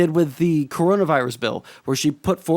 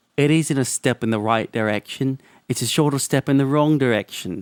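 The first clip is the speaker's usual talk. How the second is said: botched put-on British accent; 3 semitones lower than usual. Imitating a commentator reading out his own post: Sean accent impression. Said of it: "Let me see if I can do a Sean accent".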